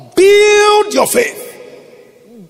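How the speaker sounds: high, slow, drawn-out, shouted preacher's call.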